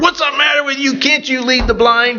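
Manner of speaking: mock, very high, rattled-off, fast yelling. Retelling what a blind woman yelled after ending up in water, retelling her yelling. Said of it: "she's yelling at me".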